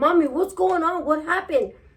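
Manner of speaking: acted-out high, angry, upset voice. Retelling how a son reacted on finding his mother crying: imitating an angry son. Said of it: "he was angry".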